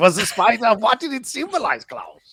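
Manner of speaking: put-on German accent. Asking another speaker about a film's spider: put-on German accent. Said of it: "you adopted a German ap-, accent there".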